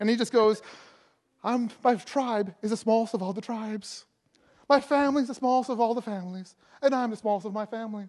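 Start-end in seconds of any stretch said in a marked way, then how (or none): 1.4-8.1 mock self-pitying tone. Retelling Gideon's reply from Judges with Gideon's mock self-pity. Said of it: "he goes to this little pity party".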